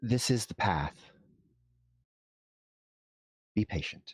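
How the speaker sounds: stage half-whisper in a spirit-like voice. Narrating a meditation, voicing words heard in the mind, half-whispering. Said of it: "they kind of whisper through your mind".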